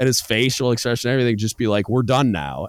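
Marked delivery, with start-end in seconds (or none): 1.9-2.7 firm, final, stern parent-like snap. Retelling how the boss ended an argument: imitating a stern snap. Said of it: "he'd get real stern".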